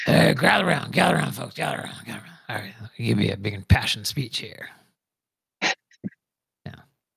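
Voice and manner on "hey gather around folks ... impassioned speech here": fake rough, gravelly voice. Talking about the actor using that voice in every show; gravelly Noah Wyle impression. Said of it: "that gravelly voice talk in every show".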